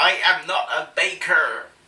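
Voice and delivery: put-on accent, Cornish-sounding, meant as American. Quoting old Camp Ranch's baking disclaimer: imitating old Camp Ranch, Cornish-sounding accent. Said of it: "That's a Cornish accent, [name]".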